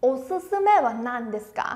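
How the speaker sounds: normal talking voice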